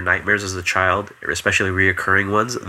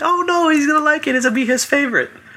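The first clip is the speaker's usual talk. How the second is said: put-on very high, insistent baby mama voice. Retelling the birthday card story, quoting the baby's mother: baby mama voice. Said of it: "I'm doing this in baby mama voice".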